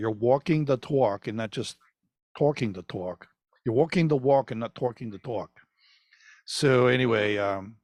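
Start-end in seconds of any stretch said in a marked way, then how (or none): 0.0-5.5 put-on New York accent. Speaker repeating a saying, putting the new york accent back on. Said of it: "I'll put the New York accent back on there".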